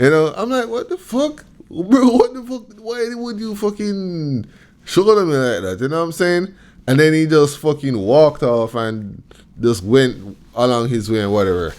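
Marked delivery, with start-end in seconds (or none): 0.7-5.8 enraged, very high-pitched, furious outburst. Retelling being shouldered on a train: imitating own angry outburst. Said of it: "I was so angry".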